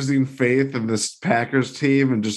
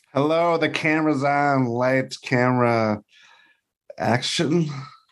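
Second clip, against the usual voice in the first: strained, tense, effortful delivery; 2 semitones higher than usual. A podcast guest, just introduced by the host, answers in a strained voice. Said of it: "Why that sounds so strained?".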